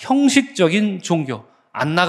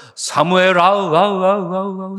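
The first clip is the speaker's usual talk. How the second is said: put-on spooky, eerie, reverberating, echoing call. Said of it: "동굴이나 첩첩삼중에서 메아리치 들리듯이 이런 목소리 있죠".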